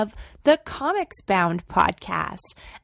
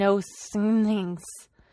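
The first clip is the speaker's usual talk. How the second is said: put-on mumble under the breath. Retelling how an instructor quietly stated the printing rules: imitating Tim mumbling under his breath. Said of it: "kind of mumbled under his breath".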